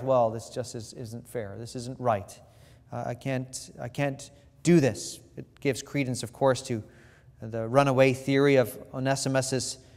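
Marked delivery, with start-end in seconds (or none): 0.0-5.2 put-on muttering under the breath, quieter. Voicing Philemon's imagined objection to Paul's request: Philemon muttering under his breath. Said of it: "you can hear him maybe muttering under his breath".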